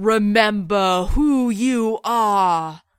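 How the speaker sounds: loud, very slow, booming voice. Narrator telling a story as a voice speaks from the clouds, booming voice from the sky. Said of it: "a voice booms from the clouds".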